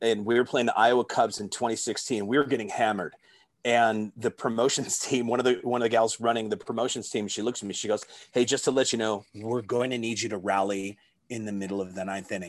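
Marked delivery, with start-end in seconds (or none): 8.3-12.5 acted, mock deadpan flat delivery. Retelling a promotions team member's request during a lopsided game, imitating a deadpan delivery. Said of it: "she was like deadpan".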